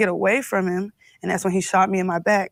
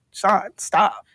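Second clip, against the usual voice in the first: mock begging in a pleading tone. Retelling being shot and on the floor, begging. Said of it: "begging him".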